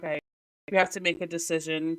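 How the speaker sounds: ordinary talk, nothing marked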